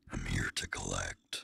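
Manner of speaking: deep, low, gritty demonic voice. A performance ending played back for comparison, in a deep gritty demon voice. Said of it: "I love the deep, demony, like gritty voice".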